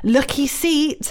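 high-pitched screamed yelling. Retelling a pedestrian screaming at the speaker on a bike, acting out his scream. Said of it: "he is screaming at me".

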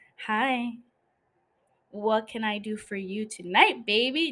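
flirtatious, come-hither voice. Showing a listener how her voice changes to her flirty self, flirty voice. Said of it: "let me do it again".

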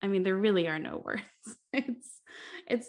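words broken up by nervous laughter. Reacting to upsetting news with a co-host, nervous laughing while talking. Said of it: "I'm laughing because I don't wanna start crying".

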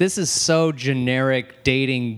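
ordinary talk, nothing marked

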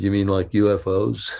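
ordinary talk

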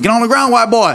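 put-on Georgia accent. Retelling a chase, voicing the man shouting at him, georgia accent. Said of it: "it's got like a Georgia accent".

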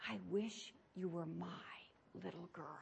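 very soft, hushed whisper. Retelling what a teacher whispered during a class hearing test: imitating a teacher's whisper. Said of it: "said in her whisper".

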